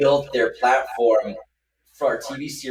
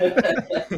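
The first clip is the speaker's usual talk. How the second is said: high-pitched damn said while laughing. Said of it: "Anthony's always like".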